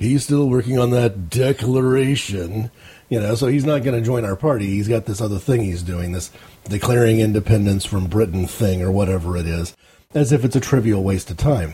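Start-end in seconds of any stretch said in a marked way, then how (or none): 0.0-2.7 drawn out slowly, dripping with heavy sarcasm. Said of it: "in a very sarcastic tone of voice".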